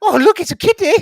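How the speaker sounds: very high, very loud, shrill, excited, gushing squeal. Imitating Scott getting excited over a cat: imitating Scott. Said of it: "Scott was gonna go".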